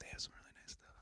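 very quiet, breathy, hushed whisper. Chatting with a co-host while watching a show, whispering. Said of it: "I'm just whispering".

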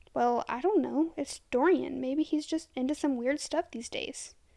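ordinary delivery

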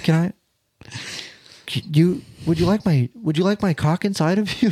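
pretending to be timid. Acting out someone too shy to talk dirty: acting shy. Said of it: "imagine you just fucking shy as fuck".

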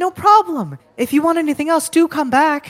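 very high, loud, called-out yell. A game master voices Gint yelling out to the players' characters. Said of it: "you all hear Gint yell".

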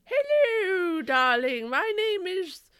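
shrill, very high, loud voice, long stretched "Hello". Inventing a character and showing how she talks: Mrs. Schmoutfire voice. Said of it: "she talks like this".

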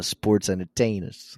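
put-on terrible New York accent. Calling opponents sports entertainers as a joke: terrible New York accent. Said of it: "my terrible New York accent".

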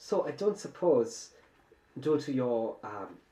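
put-on high German accent. Playing a young German man asking the group for help, put-on German accent. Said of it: "it is the uh, young German man that you had found on the train ... wunderbar!".

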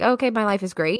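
ordinary talk

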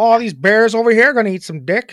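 put-on Chicago accent. Given the prompt 'Chicago' for an accent, the speaker does a Chicago accent.

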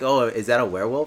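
ordinary delivery

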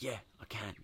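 barely-there hushed whisper, very quiet. Retelling own reply on the phone to Mum: imitating own whisper. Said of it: "but I whispered anyway".

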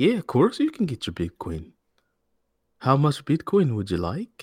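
high, sing-song put-on Irish accent. Role-playing an Irish banker asked for Bitcoin, the speaker answers in an Irish accent. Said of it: "Can you do an Irish".

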